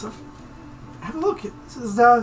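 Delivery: put-on shopkeeper accent, high-pitched. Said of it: "Please, please keep doing this accent".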